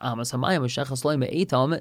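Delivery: normal talking voice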